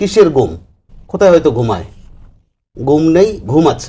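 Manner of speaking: ordinary delivery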